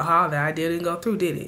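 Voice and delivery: ordinary talk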